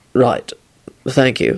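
dead, zombie-like voice, very low pitch. Narrator reads Quentin thanking Jamie after an accident, in a zombified tone. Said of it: "Quentin said in a zombified tone".

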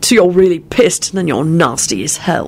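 plain

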